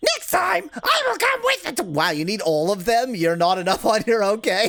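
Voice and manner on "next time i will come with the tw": high, squeaky put-on cartoon mouse voice. Reading a game character's line aloud: Mickey Mouse voice. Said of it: "It's Mickey Mouse".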